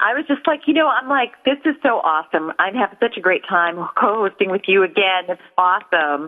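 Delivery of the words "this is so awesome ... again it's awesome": normal talking voice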